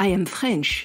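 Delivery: put-on English accent. Retelling answering a stranger who asked where the speaker is from, in a put-on English accent. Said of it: "dans mon plus bel accent anglais".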